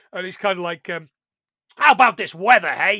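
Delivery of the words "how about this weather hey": put-on belted out loudly in a Brooklyn accent. Speaker retells the toon cab in the back of the van talking, Benny's Brooklyn accent. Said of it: "With his Brooklyn accent".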